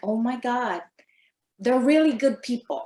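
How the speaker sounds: ordinary delivery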